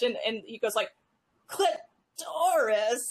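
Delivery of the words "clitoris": horrid, shrill, squeezed, pitched-up voice. Retelling a comedy skit of an audiobook reading, imitating Gilbert Gottfried's horrid voice. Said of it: "absolutely horrid voice".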